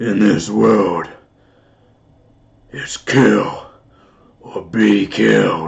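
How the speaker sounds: menacing put-on voice, low and rough. Speaker trying out different voices, attempting a scary one: scary voice. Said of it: "What sort of a scary voice?".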